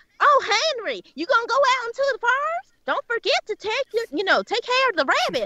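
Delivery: exaggerated country accent. Showing the accent the speaker expected others to go for: overdone country accent. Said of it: "this overdone country accent".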